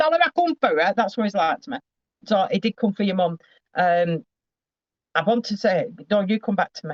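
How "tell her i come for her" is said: put-on, very high, shrill yell. Passing on what he keeps shouting at the speaker, retelling someone's shout. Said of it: "I'm shouting at you now because he's shouting at me".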